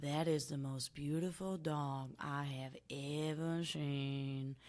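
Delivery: very slow, soft, lovestruck dog voice, "seen" stretched. Describing the dog's new storyline, speaking as him in the Monty voice. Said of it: "that's the Monty voice".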